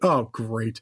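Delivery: imitated, mock disappointed tone. Retelling a movie scene, a dad reacting to a loss: imitating a disappointed dad. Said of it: "just so disappointed".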